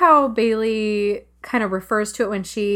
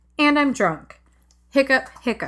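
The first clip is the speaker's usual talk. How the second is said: put-on flat, deadpan delivery; 4 semitones higher than usual. Describing how a performer plays a drunk character straight: mimicking Christina's deadpan. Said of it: "She's just very deadpan".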